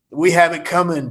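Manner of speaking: fake rough gravelly voice. Retelling lines delivered on a film set: gravelly Michael Madsen voice. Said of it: "best Michael Madsen impersonation".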